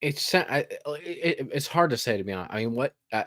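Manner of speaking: stuttering. Asked for thoughts on a game's perks, the speaker answers, stuttering. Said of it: "the reason I am stuttering".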